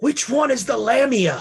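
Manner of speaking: atrocious, obvious stage whisper. Leaning over to another character during the game: atrocious stage whisper. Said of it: "in an atrocious stage whisper".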